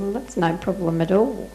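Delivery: normal talking voice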